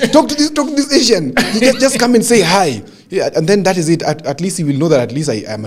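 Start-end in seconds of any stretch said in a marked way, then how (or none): 0.1-2.8 mock shouting at the top of the voice. Recalling a fellow who talked at the top of his voice, imitating him shouting. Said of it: "talking at the top of his voice".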